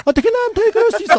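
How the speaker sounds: put-on very high-pitched voice. Imitating a person whose voice is two octaves higher, in a high-pitched voice. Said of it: "목소리 톤이 두 톤이 우리보다 두 옥타브 높은 분이에요 ... 이런 식이에요".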